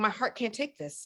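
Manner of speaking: mock soft-spoken woman's voice. A speaker retells how a woman reacted to surprising news, imitating a soft-spoken woman. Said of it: "she's so soft-spoken".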